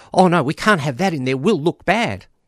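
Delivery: put-on high, flustered, alarmed, panicked voice. Recounting what a prominent advocate said about including bi people, imitating a panicked voice. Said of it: "in a panicked voice".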